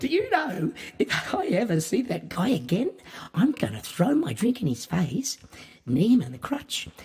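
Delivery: warm, friendly, high, swooping, excited cheer. Showing how tone can contradict words: warm, excited, friendly tone. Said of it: "put on a big, warm, friendly smile, and with an excited look on your face, say it like this".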